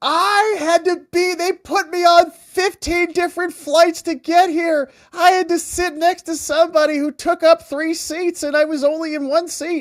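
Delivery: high, miserable, put-upon complaining whine. Imitating a journalist complaining about her trip: imitating a miserable complaint. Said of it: "she's, like, miserable".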